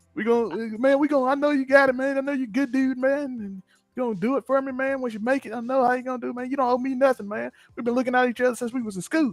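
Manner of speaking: put-on Mississippi man's way of talking. Speaker mocks how a guy from Mississippi talks, imitating a Mississippi guy's talk. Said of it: "That's how he talk".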